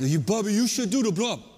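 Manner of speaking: put-on coaxing Hawaiian accent. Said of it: "in this Hawaiian accent".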